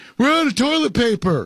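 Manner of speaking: put-on high-pitched child voice, yelling. A parent retells what their son yelled, imitating him screaming. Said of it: "my boy was screaming".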